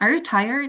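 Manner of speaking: pitch rises at the end of tired. Explaining english yes-no questions to indonesian speakers, rising pitch at end on tired. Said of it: "itu baru naik".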